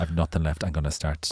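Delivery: ordinary delivery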